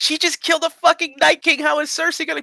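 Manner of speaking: high, outraged disbelief. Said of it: "They're gonna be like".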